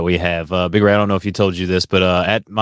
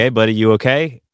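plain

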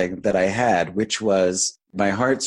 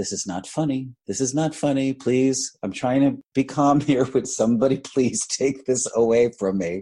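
put-on calm voice, higher; 4 semitones higher than usual. Retelling asking others to take a tiger away: imitating own calm plea. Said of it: "So I'm very calmly".

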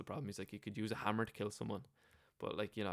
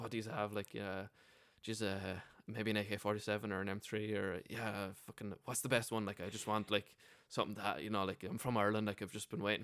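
ordinary delivery

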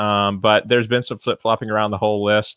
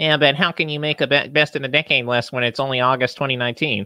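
mocking put-on online troll voice, much higher; 4 semitones higher than usual. Planning a list with a partner, the speaker voices imagined critics in a mocking online troll voice. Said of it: "imitates trolls online".

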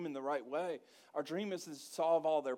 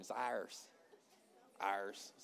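hushed, breathy, whispered pirate voice; 8 semitones lower, 6 dB quieter than usual. Speaking to a congregation, repeating a phrase in different ways: pirate voice. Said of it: "Sound like a pirate".

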